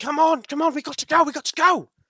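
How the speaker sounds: very high, loud, frantic, urgent scream. Game narrator voicing a character waving the party over from a stall: screaming urgently. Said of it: "as he's screaming".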